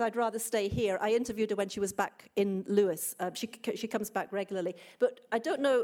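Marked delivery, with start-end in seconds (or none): none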